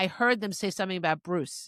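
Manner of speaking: ordinary delivery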